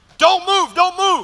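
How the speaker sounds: high, screaming, forceful voice. Retelling a police raid, a cop shouting at him: imitating a cop screaming. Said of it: "this cop is screaming at the top of his lungs".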